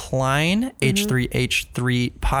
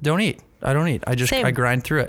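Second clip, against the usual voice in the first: ordinary talk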